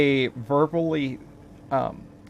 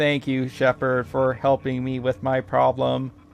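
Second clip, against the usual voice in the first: flat, expressionless one-note monotone. Imitating how they always talk to him: monotone voice. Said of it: "they always have this monotone voice".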